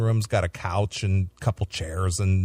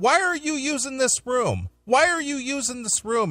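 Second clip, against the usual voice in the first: put-on shrill scream, voice way up. Retelling how a backstage manager screamed at a guy: imitating a woman screaming. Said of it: "she starts screaming at this Fozzie guy".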